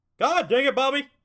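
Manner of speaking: booming, very loud, high-pitched cartoon dad voice outburst. Testing whether they can still do it, speaker tries a Hank Hill impression. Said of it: "I used to be able to do a perfect Hank Hill".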